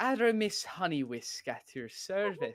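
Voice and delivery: loosely Irish-sounding voice. Voicing a flustered guild member answering a question: sort of irish accent. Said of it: "it was sort of Irish".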